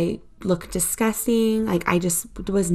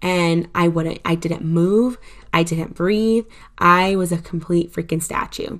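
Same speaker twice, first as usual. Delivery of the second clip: ordinary talk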